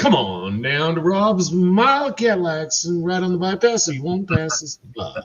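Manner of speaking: local radio commercial announcer voice. Joking on a live stream, doing a car dealership ad in radio voice. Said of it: "now we're getting on radio voice".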